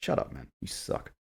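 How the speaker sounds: irritated, exasperated, breathy angry whisper. Ranting about a book's character, angry. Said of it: "I'm getting angry just thinking about this book".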